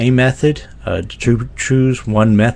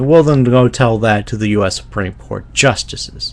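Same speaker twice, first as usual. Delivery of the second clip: normal talking voice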